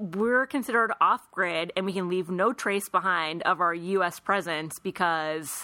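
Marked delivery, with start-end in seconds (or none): none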